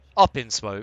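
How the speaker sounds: heavy, hard emphasis landing on the word up. Repeating a phrase just said, with stress on up. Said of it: "I emphasize the word up".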